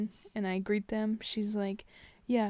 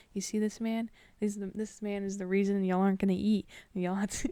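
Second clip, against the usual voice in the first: ordinary delivery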